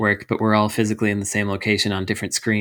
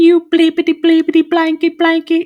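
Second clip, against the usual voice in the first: put-on tiny British baby voice, much higher and louder; 7 dB louder than usual. Retelling what online players with little british voices said, in a little british baby voice. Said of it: "their little British voices being like".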